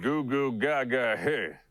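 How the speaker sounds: put-on cocky cowboy voice. Reading a mocking tweet aloud in a stupid, cocky McCree voice. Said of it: "in this stupid, cocky McCree voice".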